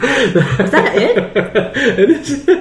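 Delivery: ordinary delivery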